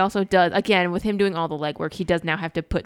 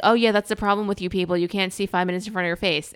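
ordinary delivery

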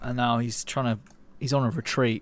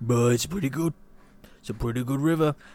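creature-from-the-marsh voice. Voicing Swamp Thing on vacation finding a river: Swamp Thing voice. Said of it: "I think Swamp Thing sounds like this".

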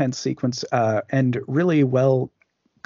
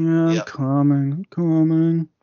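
play-acted, drowsy, groggy, just-woken kid voice; 4 semitones higher than usual. Voicing a kid who answers while walking over very slowly: imitating a sleepy kid. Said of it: "The sleepy kid walk".

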